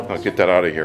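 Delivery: plain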